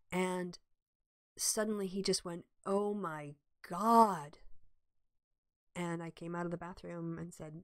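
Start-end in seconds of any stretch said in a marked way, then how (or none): 2.6-4.4 sudden, stunned, shocked outburst. Retelling a partner's reaction to the Today Show: imitating a shocked exclamation. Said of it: "his tone was just shocked".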